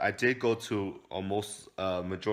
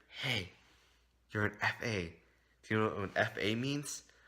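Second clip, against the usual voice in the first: hushed stage half-whisper; 2 semitones higher, 4 dB quieter than usual. Retelling what a kid said in the hallway: imitating a half-whisper. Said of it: "and he whispered".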